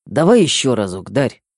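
ordinary delivery, nothing marked

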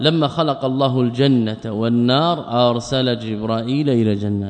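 plain

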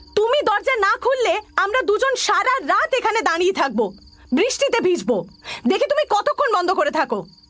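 shouting. The narrator stands outside a closed door, calling to the person inside, shouting. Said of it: "চেঁচিয়ে বললাম".

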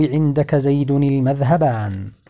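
ordinary talk

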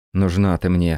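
plain reading voice

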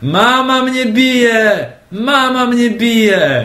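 put-on very high, very slow child's yell, "bije" stretched. Describing childhood tantrums when mum wouldn't buy sweets, acting out a shout. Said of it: "bym zaczął krzyczeć".

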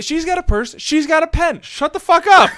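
mock overjoyed outburst, very loud, high, delighted. Retelling a man's reaction when she pulled out a pen, happy with no malice. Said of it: "because you can tell he's just so happy".

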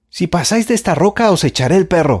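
loud, high-pitched shout. A girl at a rock warns two approaching men off, shouting. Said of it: "gritó Jorge".

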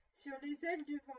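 plain reading voice

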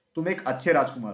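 plain reading voice

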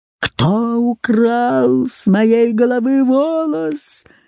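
dreadful monstrous howl, украл stretched out. Narrator reads the sorcerer appearing on a wild boar in the forest: terrible yell. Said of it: "Завопил он страшным голосом".

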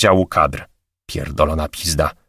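ordinary talk

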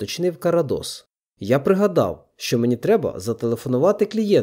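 ordinary delivery, nothing marked

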